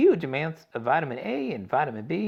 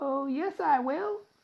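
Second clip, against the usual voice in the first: tiny, very high-pitched squeak; 12 semitones higher than usual. Reading a boy's reply to his worried parents, in a tiny squeaky Mike Teavee voice. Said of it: "squeaked the tiny voice of Mike T V".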